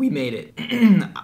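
voice cracking. Host showing viewers a dessert they made, voice cracking. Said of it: "My voice is cracking".

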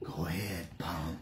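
very low, deep, hushed whisper. Show the voice you have been working on, a really low, whispery Clint Eastwood voice. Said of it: "really low, whispery Clint Eastwood thing".

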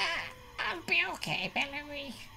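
tiny, high-pitched goblin voice. Voicing a poisoned goblin giving a weak thumbs up: [name] goblin voice. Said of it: "he's like".

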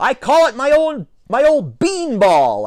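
very high, very slow, drawn-out yell. The narrator voices their younger self replying to their father, shouted back. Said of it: "I shouted back".

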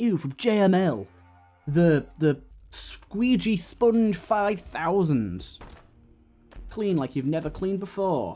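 shopping-channel infomercial announcer voice. Comparing their own delivery to UK adverts, the speaker does a JML advert voice. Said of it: "the Billy Mays sort of adverts where it's like, they go like".

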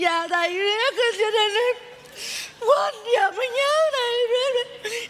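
crying through the words. A student answers the teacher's question, talking while crying. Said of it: "vừa khóc vừa nói thì chó nghe".

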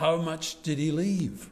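loud carrying voice. Someone in the front row turns to a man behind him, retelling a loud question. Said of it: "said in quite a loud voice".

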